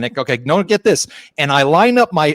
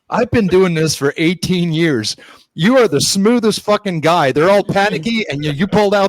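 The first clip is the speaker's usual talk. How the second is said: words spilling out through laughter; 4 semitones higher than usual. Retelling what the anesthetist said while hitting him on the back: imitating someone laughing while talking. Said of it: "laughing, saying".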